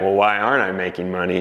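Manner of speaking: ordinary talk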